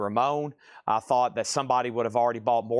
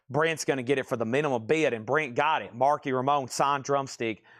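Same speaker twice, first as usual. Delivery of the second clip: ordinary talk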